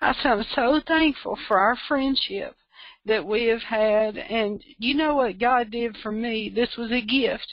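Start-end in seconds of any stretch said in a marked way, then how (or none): 0.0-4.2 tearful voice, on the verge of tears. Recalling what she told a dear friend, tearful. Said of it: "I'm going to cry".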